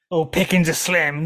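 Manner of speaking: sarcastic mocking mimicry. Watching a show, speaker mocks how a character talks, mocking imitation of show dialogue. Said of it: "No one fucking talks like this".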